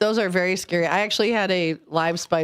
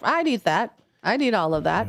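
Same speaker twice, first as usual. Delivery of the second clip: plain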